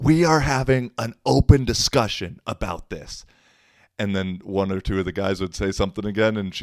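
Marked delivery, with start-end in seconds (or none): 0.0-3.2 loud, high-pitched insistent yell. Retelling what a woman said during an argument: imitating someone yelling. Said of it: "like, yelling".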